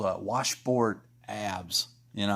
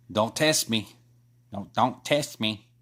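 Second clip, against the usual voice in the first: put-on Chicago accent. Admitting they can't do a man's accent justice, trying a put-on Chicago accent. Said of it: "he has a Chicago accent".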